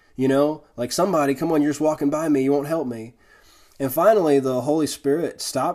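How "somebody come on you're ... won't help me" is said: mock self-pitying, frustrated whining. Retelling being stuck in snow while people walked by: imitating own self-pitying complaint. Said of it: "that self-pity victim mentality".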